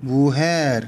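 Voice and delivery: mujer with stress on final syllable -jer. Spanish word-stress lesson, showing where mujer is stressed; stress on last syllable of mujer. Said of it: "맨 끝에 모음 에로 가죠. 뒤로 가는 거예요".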